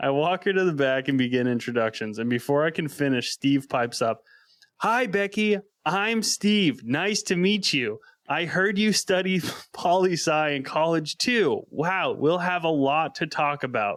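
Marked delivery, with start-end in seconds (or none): 4.8-14.0 mock drawn-out, deliberate, high-pitched half-shout. Retelling a coworker greeting a new hire: imitating someone shouting slowly. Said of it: "He's fucking shouting at her and talking slowly".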